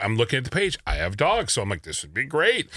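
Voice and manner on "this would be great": ordinary talk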